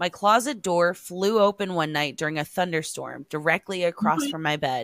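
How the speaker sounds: ordinary talk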